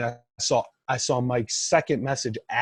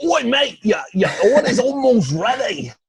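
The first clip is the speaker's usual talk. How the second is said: put-on Australian accent, much higher, louder; 11 semitones higher, 7 dB louder than usual. Describing takeout text notifications from Outback, reading one out in an Australian accent. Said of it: "your famed Australian accent".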